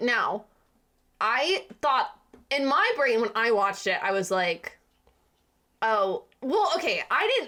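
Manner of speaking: stuttering, stammering, halting restarts. Recapping a film's hypnotist plot to a co-host, stuttering. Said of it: "I'm like stuttering so much".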